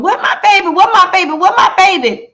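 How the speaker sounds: high, loud, frantic, repeated screaming. Retelling a shootout where a woman screamed for her child: imitating someone screaming. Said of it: "she started screaming".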